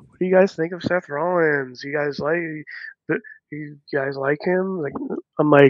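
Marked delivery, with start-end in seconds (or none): 0.2-4.8 disembodied voice calling from far away. Retelling a voice heard during a live show: imitating a far-away voice. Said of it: "it very far away".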